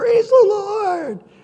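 very high, very loud, ecstatic excited scream. Retelling how friends answered across campus, retelling a scream back. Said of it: "And they'd scream back".

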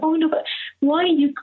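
high, kind and concerned tone. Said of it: "became very, very kind and concerned".

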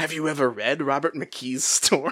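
very creepy put-on voice. Imagining James replacing another character in the book, put-on creepy James voice. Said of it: "James asking Bella in a very creepy voice".

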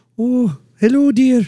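very high Scottish nanny character voice. Describing a Scottish-accented man reading bedtime stories, then mimicking him: Mrs. Doubtfire voice. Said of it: "You make him do Mrs. Doubtfire".

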